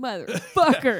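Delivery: put-on furious, angry voice. Retelling a character's reaction after the hero escapes: imitating a furious character. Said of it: "She's so pissed".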